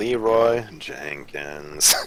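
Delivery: mock-depressed delivery. Told to sound more depressed, the speaker tries the line again: mock-depressed delivery. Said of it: "You don't sound as depressed. It's gotta be like a tone shift".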